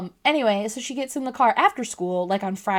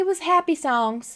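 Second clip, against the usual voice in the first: put-on slow, high child's voice with country drawl; 7 semitones higher than usual. Retelling what a young daughter said in the car: imitating daughter Lila with an accent. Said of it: "I keep giving her an accent".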